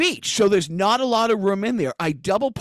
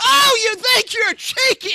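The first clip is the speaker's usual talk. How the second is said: put-on scream, higher and louder; 5 dB louder than usual. Retelling an angry neighbour over a blocked garage: imitating someone screaming. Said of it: "he starts screaming at me".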